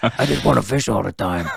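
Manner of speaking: small, rough, creaky, gravelly voice. Quoting his words late at night, little gravelly voice. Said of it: "In his little gravelly voice".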